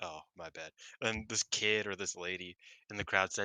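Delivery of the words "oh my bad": put-on exhausted voice, lower and quieter. Retelling a post-match reply to the ring announcer: imitating Mayu sounding exhausted. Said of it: "Mayu's just, like, exhausted".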